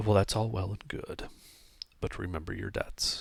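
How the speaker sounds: low, hushed murmuring voice. An unknown person ends a talk with River Mist, in a low murmuring voice. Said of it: "is speaking like a low murmuring voice".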